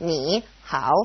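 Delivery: ni and hao each said in third tone. Showing a learner two third tones in a row: two third tones. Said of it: "if it's a third tone and a third tone next to each other".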